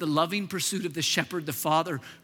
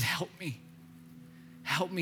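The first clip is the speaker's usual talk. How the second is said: mock, slow, whispered, tearful weeping; 10 dB quieter than usual. Retelling a man who wept and could not get words out: imitating someone weeping. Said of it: "He just began to weep".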